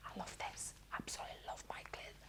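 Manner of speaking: speaking in a whisper. Showing a clear pen while colouring a stamped image: whispering. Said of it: "I don't know why I'm whispering".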